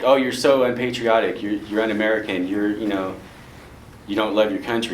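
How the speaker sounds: ordinary delivery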